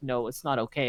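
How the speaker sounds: mock crying, sobbing voice. Retelling what a sad friend said when greeted: imitating someone crying. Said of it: "he sounded like he's crying".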